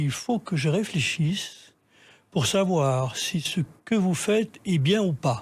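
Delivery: very slow, gentle, unhurried, weighed-out words. Recalling a man's reply when asked for an interview, imitating slow, soft speech. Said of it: "il m'a dit alors tout doucement".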